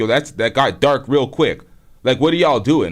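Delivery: ordinary delivery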